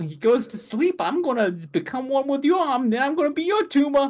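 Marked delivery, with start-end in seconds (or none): 1.0-4.1 very high, pitched-up monster creature voice. Recapping a scene about a tumor on someone's arm: tumor creature voice. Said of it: "I got a good tumor voice".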